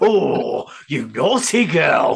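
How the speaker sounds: very slow, stretched-out, drawn-out delivery. Imitating the other speaker's reaction to a listener's answer. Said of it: "That was the greatest reaction ever".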